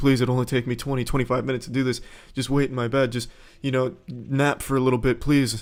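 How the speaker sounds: play-acted, tearful, begging, pleading tone. Retelling begging a disappointed girl to wait in bed: imitating own begging. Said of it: "I was begging her".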